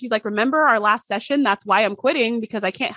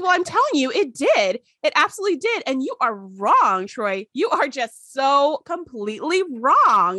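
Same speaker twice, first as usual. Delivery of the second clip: put-on chipper, upbeat, insistent voice; 4 semitones higher than usual. Retelling what Janet said to Troy: imitating Janet's chipper upbeat tone. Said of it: "most chipper, like, upbeat way".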